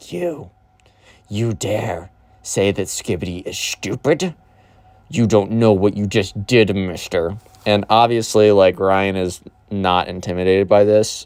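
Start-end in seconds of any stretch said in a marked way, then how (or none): 0.1-7.4 unsettling, creepy, creature-like voice. Retelling what a hunched-over person at a table said: Gollum voice. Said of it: "it was like freaking like Gollum from Lord of the Rings, like that voice".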